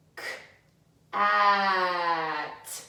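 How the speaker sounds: "at" with its vowel stretched out long. A teacher showing listeners how to stretch the sounds in a word: stretched-out sounds. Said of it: "make them really long so we can hear".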